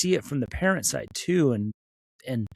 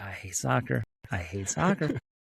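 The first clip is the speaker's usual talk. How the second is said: put-on muttered whisper under the breath, quieter; 2 semitones lower, 5 dB quieter than usual. Retelling own past words, imitating a whisper under the breath. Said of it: "whispered under my breath".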